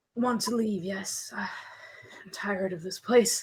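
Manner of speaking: put-on aged, worn, slow, breathy half-whisper. Game master voicing a character answering a question, old weathered voice. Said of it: "that old weathered voice".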